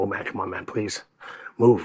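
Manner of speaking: mock anxious, worried, pleading whisper. Retelling watching a knocked-out fighter who did not move: imitating own worried plea. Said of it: "I was actually sitting there going".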